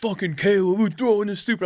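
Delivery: mock, high, frantic crowd freaking out. Retelling fans in a bar reacting to a play: imitating fans freaking out. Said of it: "freaking out".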